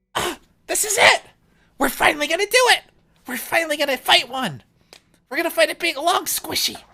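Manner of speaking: high, loud, thrilled and eager excited outburst. Roleplayer voicing a character in the back of the boat, excited. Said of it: "You sound very excited".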